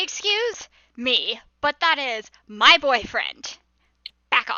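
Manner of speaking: loud, threatening, intimidating tone. Voicing a character who slams a hand on the table to intimidate women: intimidating. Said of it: "slam her hand on the table and be like".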